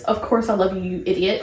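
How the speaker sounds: usual speaking voice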